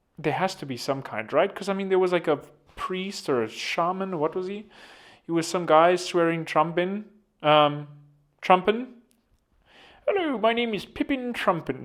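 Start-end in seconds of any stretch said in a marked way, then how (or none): 10.1-11.9 improvised put-on Irish accent, pitched up. Improvising a made-up character introducing himself, in an irish accent. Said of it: "I don't know why I'm talking an Irish an Irish accent".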